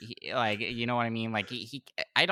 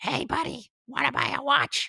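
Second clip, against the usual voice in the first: very high-pitched, shady, sly seller voice; 4 dB louder than usual. Picturing meeting that voice in a dark alley, a speaker does a Toad voice. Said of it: "I heard Toad's voice that you just did".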